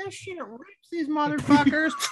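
put-on high, slow, drawn-out little old granny voice. Retelling what a grandma at home says: imitating a grandma. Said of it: "grandma at home, like".

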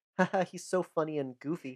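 ordinary delivery

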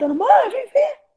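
very high, loud, thrilled, excited shout. Retelling how he shouted for his mother after an email arrived: retelling his shout. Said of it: "Eu gritando".

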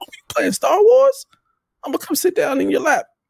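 mock bubbly, super excited, very high, swooping. A parent retells his son's reaction to him playing star wars, imitating his excited son. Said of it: "my son was like super excited".

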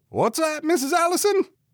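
loud, very high voice. Mr. Babcock responds to Mrs. Allison, speaking loudly. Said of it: "Mr. Babcock said loudly".

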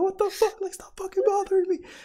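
high, fast yelling. Telling how they snapped during a game, retelling a yell. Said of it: "I literally started yelling like".

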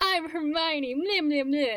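put-on shoddy high British accent. Recalling reading Harry Potter aloud as a kid, shoddy British Hermione voice. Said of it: "my very shoddy British accent".

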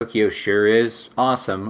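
mock deadpan, dry, unexcited, slow and flat. Describing how he talked about tokyo in the montage, imitating someone deadpan. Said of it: "he was just deadpan, like".

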